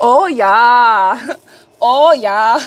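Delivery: put-on German accent. Speaker, after asking listeners where it's from, repeats it in a German accent. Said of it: "In my best German accent".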